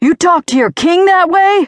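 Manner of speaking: shrill, very high-pitched, loud screaming. Narrator reads a father confronting his wounded soldier at gunpoint, screaming. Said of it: "he screamed".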